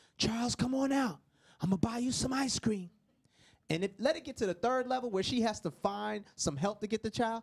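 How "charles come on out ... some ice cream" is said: mock male whisper, higher pitched. Acting out a father searching again and bribing: imitating a man whispering. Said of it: "he is now whispering and bribing".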